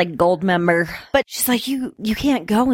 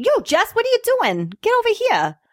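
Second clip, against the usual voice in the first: very high, swooping bad Brooklyn accent; 14 semitones higher than usual. Quoting a daughter character's line, in a bad Mark Wahlberg Brooklyn accent. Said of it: "I can't really do a Brooklyn".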